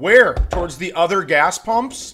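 mock, loud, furious, sarcastic and incredulous tone. Retelling an argument at a gas pump: retelling a furious retort. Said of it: "I am so furious".

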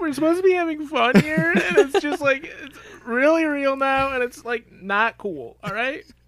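very high, tearful crying voice. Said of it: "I'm fucking crying right now".

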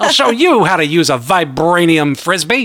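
put-on vintage mid-Atlantic accent. Imagining a director vowing to do it better: Sam Raimi in transatlantic accent. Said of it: "an old-timey, like, transatlantic accent".

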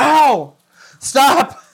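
sudden, high-pitched cry of pain. Telling how a lawyer walking toward the speaker suddenly screamed: retelling a scream. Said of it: "he screams".

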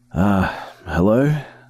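put-on groggy, drowsy, just-woken sleepy voice. Reading a story, answering a phone call just woken up: groggy voice. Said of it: "I answered in a groggy voice".

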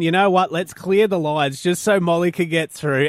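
normal talking voice

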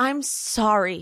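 put-on sincere, earnest voice. Retelling an apology from a reality show: imitating a sincere, earnest voice. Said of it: "with the most sincere and earnest voice".

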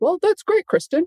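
very high-pitched voice. Retelling what he said in the background, imitating how he talks. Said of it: "And exactly how he talks".

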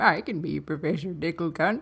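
put-on acted elderly man voice. Asked by the other speaker to play the character, Professor Dicklecunt old man voice. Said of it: "you do it so much better".

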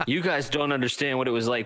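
normal talking voice

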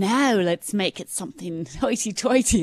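put-on affected, slow, drawn-out British accent. Mid-question, the speaker unexpectedly slips into a british accent. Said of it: "I don't know why I'm doing a British accent here".

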